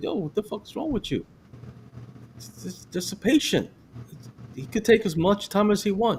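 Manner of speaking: mock very high, heated angry voice. Retelling confronting a man who rushed an elderly patient: retelling an angry confrontation. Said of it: "I went up on him too".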